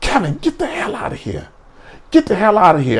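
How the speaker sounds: stern, high, swooping authoritative voice. Retelling his mother ordering him out: imitating mother sounding authoritative. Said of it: "she was trying to be authoritative".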